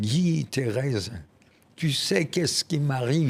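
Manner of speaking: put-on heavy German accent. Retelling what a friend said on coming into the shop: imitating a strong German accent. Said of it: "Il avait un accent allemand très prononcé".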